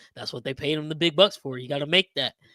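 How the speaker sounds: put-on sarcastic tone. Retelling a line from a post-game presser: imitating a sarcastic remark. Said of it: "he said it sarcastically".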